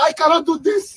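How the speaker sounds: voice cracking and breaking apart. A man in a stuck car tells his companion he wants to go back, voice cracking. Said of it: "his voice was cracking and everything".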